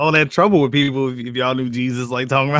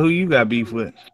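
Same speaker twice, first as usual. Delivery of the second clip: plain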